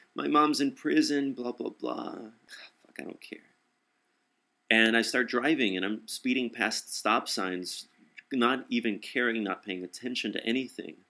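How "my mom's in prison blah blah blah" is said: put-on crying voice. Retelling what a crying man in the car kept saying, imitating someone crying. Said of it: "He's just crying".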